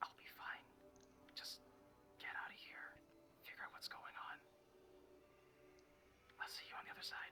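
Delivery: hushed, barely audible whisper under the breath. Voicing Emmy telling another character to get out: whispering under her breath. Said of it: "you hear Emmy whisper under her breath".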